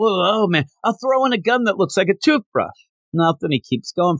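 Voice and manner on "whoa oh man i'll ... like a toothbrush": yelling voice, pitched higher. Retelling a character calling after someone walking away: imitating someone yelling. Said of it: "And then he yells out".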